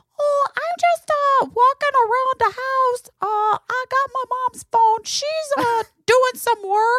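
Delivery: mock tiny, high voice. Retelling a call from Bob on his mom's phone, imitating Bob's tiny voice. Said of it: "hear this tiny voice".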